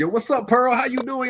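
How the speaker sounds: very high, casual, easygoing friendly tone. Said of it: "we talk to each other like this".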